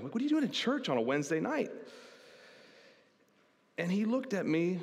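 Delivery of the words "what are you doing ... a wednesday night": mock patronizing, superior, condescending talking-down tone. Retelling own past remark to a friend in class, imitating a condescending tone. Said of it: "in a condescending way".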